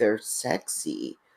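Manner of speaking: weird, creepy, breathy whisper. Recounting what a man said, the speaker imitates him in a weird, creepy voice. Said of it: "in a weird, creepy voice".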